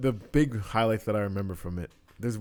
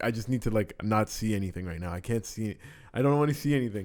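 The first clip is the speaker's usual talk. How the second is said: plain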